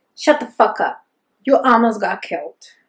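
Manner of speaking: furious, growled, snarling delivery. Reading a novel scene where one man snarls at another who almost got killed. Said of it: "He snarls".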